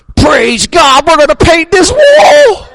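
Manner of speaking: high, loud, joyful shout belted out up high.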